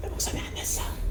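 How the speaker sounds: voiceless whisper.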